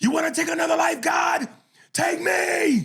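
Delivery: acted, furious, very high, loud yell. Retelling a film scene where a reverend yells at God: imitating someone yelling at God. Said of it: "he starts yelling at God".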